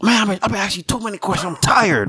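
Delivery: high, fast, fake-mad and exhausted, rattled off.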